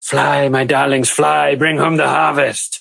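scruffy, rough, creaky little goblin woman voice. Voicing a goblin lady who looks up at a charging attacker: goblin lady voice. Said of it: "tiny, disheveled green goblin lady as she just looks up at you and just says".

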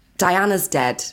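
normal talking voice

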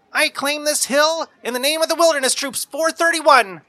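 put-on very high, loud, shrill little-boy yell. Narrator voicing Jimmy, a wilderness kid, yelling: high-pitched little voice. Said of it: "yells in a high-pitched little voice".

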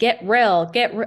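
put-on loud Utah accent. Quoting Katie telling Schwartz to get real: imitating Katie's Utah accent. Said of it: "she has the Utah accent".

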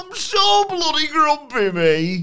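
very high, loud comic voice swooping slowly. Joking about a grumpy wrestler, slipping into a Billy Connolly voice. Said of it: "I went a bit Billy Conny there".

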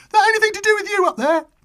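very high, piping male voice. Retelling being caught with records by a man with a flashlight: imitating a high-pitched man. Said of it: "this guy with quite a high-pitched voice".

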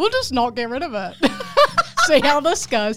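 voice laughing through the words.

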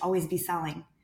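ordinary talk

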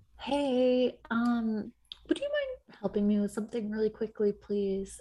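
very high, swooping, sweet voice. Acting out asking someone nearby for help, voice going way up. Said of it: "my voice goes up hella octaves".

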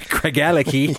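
put-on Scottish accent. Reading out a Scotch whisky's name: Scottish accent. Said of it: "say that in a Scottish accent".

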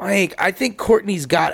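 ordinary delivery

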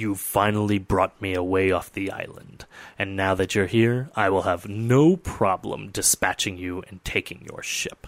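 deep, rumbling monster voice. Narrating to players as a winged creature emerges from the shadow, deep, rumbling voice. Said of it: "it speaks to you in a deep and rumbling voice".

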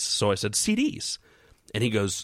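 normal talking voice

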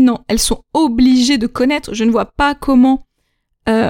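usual speaking voice

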